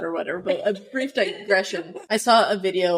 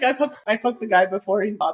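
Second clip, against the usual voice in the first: ordinary delivery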